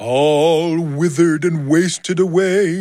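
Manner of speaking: slow, high, eerie voice, "all" drawn out. A narrator reads a woman's reply in a tale: spooky voice. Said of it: "she says in a spooky voice".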